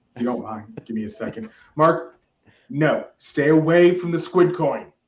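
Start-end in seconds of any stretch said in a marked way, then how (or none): 1.7-4.8 raised, drawn-out, shouted scolding yell. Warning a viewer named Mark off a coin: mock yelling at someone. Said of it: "I'm gonna have to yell at someone right now".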